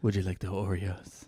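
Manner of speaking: low Spanish-accented voice.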